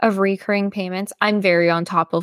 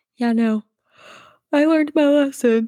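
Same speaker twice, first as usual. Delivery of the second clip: high-pitched speech talked through a yawn; 8 semitones higher than usual. Tired speaker chatting with another speaker, talking through a yawn. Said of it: "Sorry, I'm yawning".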